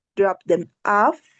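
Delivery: pitch rises on "off" at the end. Intonation lesson on phrase endings, rising intonation on off. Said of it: "the rising intonation goes in this case at the end".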